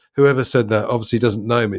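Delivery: ordinary talk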